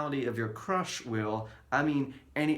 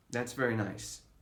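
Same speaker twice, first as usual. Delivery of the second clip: ordinary delivery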